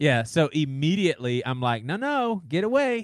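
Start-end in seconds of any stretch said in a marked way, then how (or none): 1.8-3.1 very high, overly cheerful super happy voice. Retelling shooing off a dog that follows him, in a mock super happy voice. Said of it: "like in a super happy voice".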